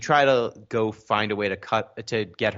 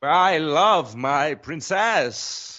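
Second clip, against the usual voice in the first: put-on grandiose voice, pitched much higher; 7 semitones higher than usual. Speaker tries out a voice while chatting with others, Matt Berry impression. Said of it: "I'll workshop my Matt Berry impression".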